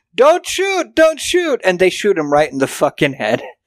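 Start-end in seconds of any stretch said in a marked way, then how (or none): 0.2-1.6 mock shrill, very high-pitched yell. Retelling a movie scene where a shop owner yells at cops: imitating someone yelling. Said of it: "he's yelling at the cops".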